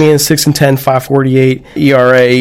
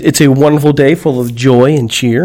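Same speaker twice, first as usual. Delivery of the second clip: ordinary talk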